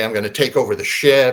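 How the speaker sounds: plain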